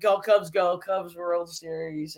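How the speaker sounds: ordinary talk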